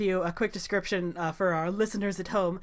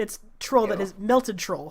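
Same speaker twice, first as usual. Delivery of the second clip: ordinary delivery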